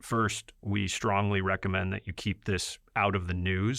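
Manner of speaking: ordinary talk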